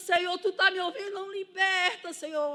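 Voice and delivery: acted, high, pleading shout. Testifying to the brothers, she recalls calling out to the Lord; retelling her own shouting. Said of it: "E comecei a gritar".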